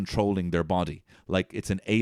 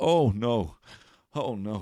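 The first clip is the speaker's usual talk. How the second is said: play-acted resigned, dreading oh no; 2 semitones higher than usual. Retelling a man curled into a ball on the ground, imitating resigned dread. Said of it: "like he knew this day was coming".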